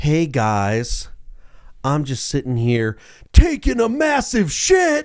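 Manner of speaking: seductive, sultry woman's voice, drawn out. Describing a video, retelling what the woman says to the camera, mock-sultry woman's voice. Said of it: "And in a sultry voice".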